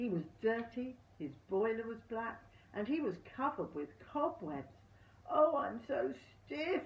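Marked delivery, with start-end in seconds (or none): 5.3-6.8 loud, drawn-out, high, aching groan. A cobweb-covered engine, just brought out again, speaks while puffing out, groaning. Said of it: "he groaned".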